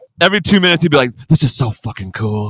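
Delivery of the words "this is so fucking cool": hushed whisper. Retelling how the dad said it during the hunt: imitating a whisper. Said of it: "He would, like, whisper it to me".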